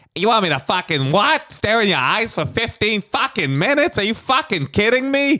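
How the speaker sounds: put-on strong Boston accent, pitched very high. Acting out a Boston guy told to stare into eyes: Bill Burr impression. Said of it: "This is your Bill Burr impression".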